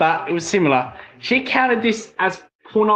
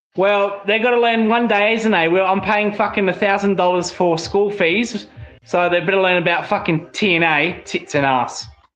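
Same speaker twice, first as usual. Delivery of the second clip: ordinary delivery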